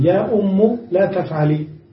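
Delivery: plain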